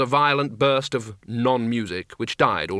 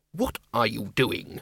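hushed, hissing voice; 4 dB quieter than usual. A narrator reads Ridcully's line cutting into another character's talk: hissed. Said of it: "hissed Ridcully".

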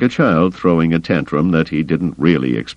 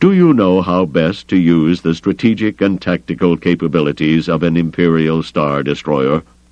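plain reading voice

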